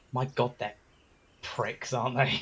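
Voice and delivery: soft, hushed whispered aside. Player's character walks up to two companions and speaks, whispering. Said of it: "I'm whispering this, by the way".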